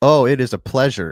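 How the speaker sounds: open, pointed sarcasm. Host replying to a guest who thanks him for having him; sarcastic. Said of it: "I don't know why I said that so sarcastically".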